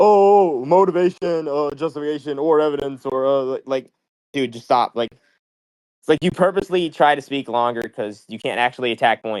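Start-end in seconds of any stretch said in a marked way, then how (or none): 0.0-3.4 dismissive, rote, parroting, listing delivery. Mocking the opponent in a debate for repeating himself: imitating opponent repeating himself. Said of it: "you just keep repeating yourself".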